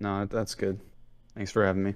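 sounding defeated. A caller thanks the host as his call ends, sounding defeated. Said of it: "you sound so defeated".

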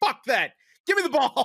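mad, defiant tone. Retelling an injured player refusing to stop the game; mock-angry and defiant. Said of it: "she's all mad".

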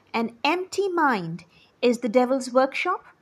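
ordinary delivery, nothing marked

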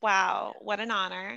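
flat, level reality-star voice. Reacting to everyone turning around for a pretend audition: sounding like Kourtney Kardashian. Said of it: "That sounded like such a, like, Kourtney Kardashian".

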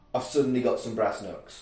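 usual speaking voice

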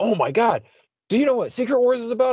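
put-on gushing excitement, very high pitched and rising. Retelling a friend asking about Secret Wars, imitating Justin's excitement. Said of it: "he was all like excited".

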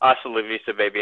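ordinary delivery

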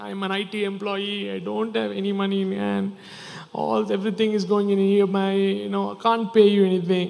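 weepy, crying, pleading voice. Retelling how a man fell at the king's feet, imitating him crying and pleading.

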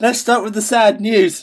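upbeat happy delivery. Announcing to the others that they will start with the sad news: sounding happy. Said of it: "He sounds so happy saying that".

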